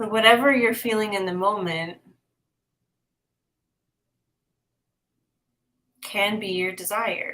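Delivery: slow, unhurried, measured, deliberate delivery. Card reader giving Dale a one-card answer, talking a little slow. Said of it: "it makes me talk a little slow".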